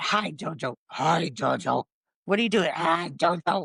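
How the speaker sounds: put-on slow kid voice, like a child at play. Retelling what the kid said while playing with toys: imitating a kid's play voice. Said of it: "And you would do voice".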